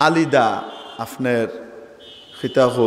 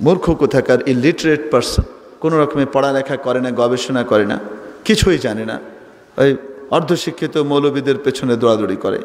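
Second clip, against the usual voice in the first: ordinary talk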